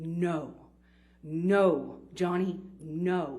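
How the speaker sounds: slow, concentrated, controlled. Retelling a woman stepping between the speaker and johnny, retelling slow, concentrated speech. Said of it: "in just a very slow but very concentrated".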